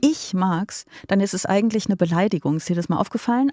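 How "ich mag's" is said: ich hit hard with heavy stress. Explaining how stressing one word turns praise into an insult: stress on ich. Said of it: "wenn man das Ich betont".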